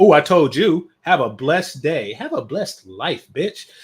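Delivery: loud, derisive, mocking put-on voice. Reading out a commenter's reply and mimicking how she said it. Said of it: "Why did she say that like she".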